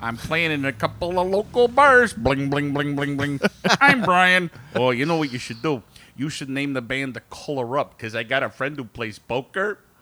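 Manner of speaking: put-on impression with a Chicago accent. Play Brian from Chicago suggesting something to the others, as a Brian impression. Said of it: "That was an absolute spot-on impression of Brian".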